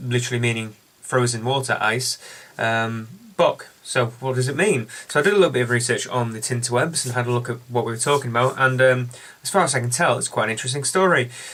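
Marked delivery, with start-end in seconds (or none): 1.8-3.7 Eisbock split into ice and Bock, Bock raised.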